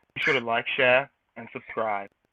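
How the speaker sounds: put-on British-accented voice. Repeating a sign-off on request: british accent. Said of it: "can you do that in a British voice again?".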